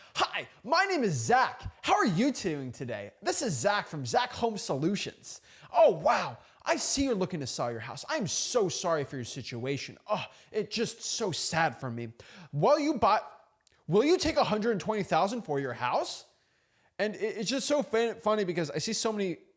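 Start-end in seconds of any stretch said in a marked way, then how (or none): 0.2-16.3 over-the-top fake salesman voice with salesy sympathy. Describing a house-buying competitor who is more of a salesman, imitating a salesman. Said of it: "the other person's more salesman, like".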